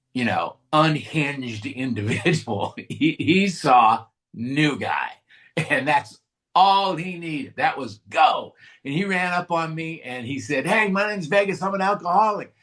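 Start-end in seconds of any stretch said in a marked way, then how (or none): 10.7-12.5 put-on cheery, eager, happy voice, pitched up. Telling a story, imitating a man who ran up and introduced himself; mock-happy Vegas greeting. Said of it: "why you're so happy about this".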